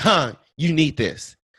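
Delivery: play-acted insistent, forceful, pushy delivery. Retelling how a woman pushed a card on the speaker: imitating a forceful demand. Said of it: "Like, forcefully".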